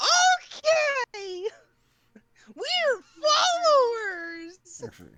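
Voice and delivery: put-on very high, loud, otherworldly, ethereal children's chorus voice. Kids answering the Druid's reminder, ethereal children's voices. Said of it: "these ethereal children's voices going".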